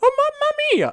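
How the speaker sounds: pitch way up, very high Italian cartoon voice. Explaining a joke to someone who missed it, then doing a Mario voice. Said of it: "I'm doing a fucking Mario voice".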